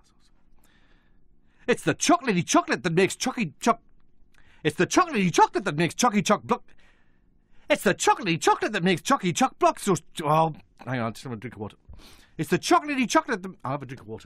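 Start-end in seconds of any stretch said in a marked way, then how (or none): 0.0-9.9 upbeat Newcastle Geordie accent, advert-style read. Doing another take of the chocolate line as directed: Geordie accent. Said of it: "And the Geordie accent this time".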